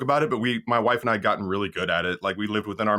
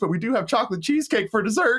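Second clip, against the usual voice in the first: mock panic behind politeness, higher pitched; 13 semitones higher than usual. Acting out his past waiter self offering dessert: imitating his own panicked waiter voice. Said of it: "I don't want you to hear the panic in my voice".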